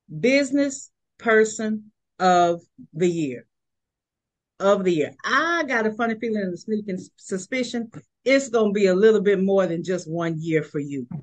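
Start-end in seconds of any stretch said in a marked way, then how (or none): 0.2-5.1 slow, deliberate, measured delivery, each word weighted. Presenting to the audience, saying it slow. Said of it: "I got to say it slow".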